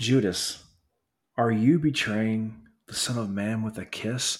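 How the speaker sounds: very soft, somber, hushed voice. Picturing Jesus asking Judas a question, in a put-on very soft, somber voice. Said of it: "in this very soft, somber voice".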